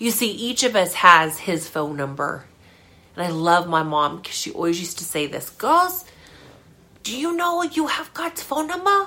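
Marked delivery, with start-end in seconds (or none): 5.5-9.1 put-on very high-pitched voice with Korean accent. Quoting her mom's saying to the girls, in her mom's Korean accent. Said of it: "In her Korean accent".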